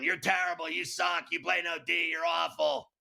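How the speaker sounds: mock-shouting, put-on yell. Retelling a game, the speaker recalls shouting harsh insults at a player from the sideline, in a retold yell. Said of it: "and I'm yelling".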